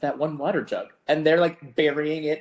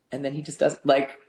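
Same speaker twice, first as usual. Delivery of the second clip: normal talking voice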